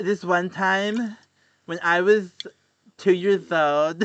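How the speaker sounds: mock slow, halting, slurred, broken-up drunk voice. Mocking another speaker who claims not to be drunk: imitating drunk slurring.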